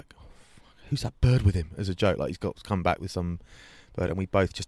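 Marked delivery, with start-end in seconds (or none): 0.2-1.7 imitated whispering voice. Retelling a joke told to a friend at a surprise party: imitating a whisper. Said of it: "I just whispered to Dan".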